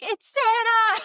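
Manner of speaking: play-acted, very high-pitched, loud, far-carrying shout. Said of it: "I have probably yelled".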